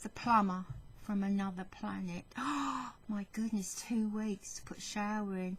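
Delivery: hushed, quiet whisper. Complaining about the plumber while the builders are in, whispering. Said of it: "I'm whispering this".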